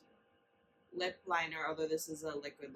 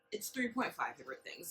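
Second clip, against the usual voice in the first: ordinary talk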